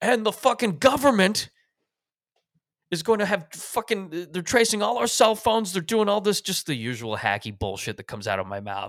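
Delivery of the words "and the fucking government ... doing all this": acted, very high, loud, shouted rant. Retelling an argument at a bar: retelling own angry yelling. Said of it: "And I'm just yelling, and I'm like".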